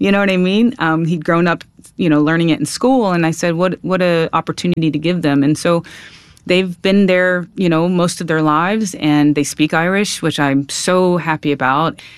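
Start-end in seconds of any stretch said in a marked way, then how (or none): none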